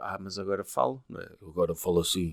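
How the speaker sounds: very deep, hushed voice. Speaker retelling what Elizabeth Holmes told people who knew her, in Elizabeth Holmes deep voice. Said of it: "Ela começou a falar grosso".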